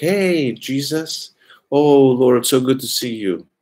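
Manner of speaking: intimate, adoring, fond, affectionate tone at slow pace. Speaker acts out people greeting Jesus, with mock fond, intimate affection. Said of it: "say it with fond, intimate affection".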